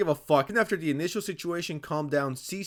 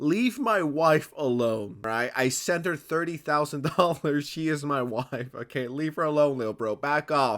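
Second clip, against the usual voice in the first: normal talking voice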